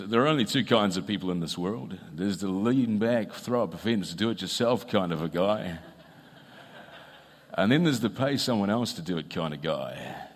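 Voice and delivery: deep TV commercial narrator announcer voice. Quoting a current TV ad's voiceover, doing a Mitre 10 ad voiceover impression. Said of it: "That's my best voice".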